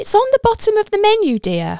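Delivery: cheery, very high, bright, swooping sing-song voice. A woman answers a husband's question about the menu code, cheery. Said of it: "Wilma replies in a cheery voice".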